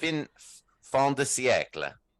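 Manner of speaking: Italian-accented pronunciation. Speaker tries out a french phrase, saying it in an italian accent. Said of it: "I said it with an Italian accent".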